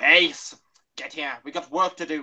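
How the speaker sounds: very loud character voice, bellowed at full volume. Trying a Doctor impression after choosing which Doctor to do: Sylvester McCoy impression. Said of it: "we could try Sylvester McCoy first".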